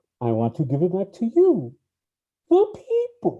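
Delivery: swooping masked villain voice, pitched too high. Several people discussing a movie scene take turns at impressions, Bane impression. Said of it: "That was like too high of a voice".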